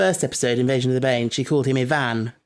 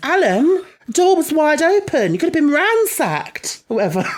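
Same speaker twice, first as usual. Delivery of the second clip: put-on high, raised middle-aged woman's voice; 5 dB louder than usual. Speaker retelling what she says when Alan leaves the door open, imitating a middle-aged woman. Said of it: "very good at doing impressions of middle-aged women".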